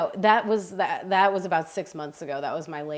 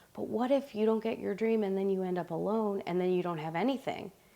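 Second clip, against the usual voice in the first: mock-scared small voice, much quieter; 2 semitones higher, 6 dB quieter than usual. Voicing an inner doubt about betting on yourself, in a put-on little scared voice. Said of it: "a little scared voice that goes".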